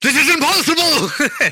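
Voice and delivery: very high, frantic, freaked-out panic. Voicing a stabbed enemy looking all around him: panicked, freaking out. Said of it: "he's freaking out".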